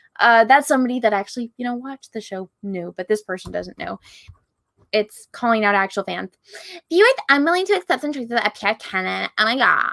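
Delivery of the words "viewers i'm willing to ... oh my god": mocking, swooping, sing-song Valley girl voice. Quoting a person who writes about the show's fans, in a mocking SJW voice. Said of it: "that's my S J W voice".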